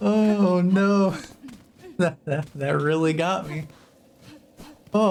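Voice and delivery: crying with laughter. After a silly bit cracked the speaker up, laughing so hard crying. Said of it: "I'm crying".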